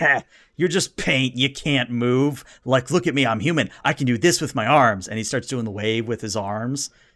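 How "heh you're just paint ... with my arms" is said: put-on taunting, mocking minion voice. Voicing a minion who dodges a hammer swing: taunting minion voice. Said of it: "minion dodges out of the way and goes".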